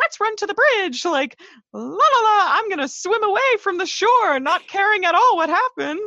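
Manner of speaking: high, squeaky cartoon mouse voice. Describing a 12-year-old boy character who acts without thinking, voice like Mickey Mouse. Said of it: "You sound like Mickey Mouse".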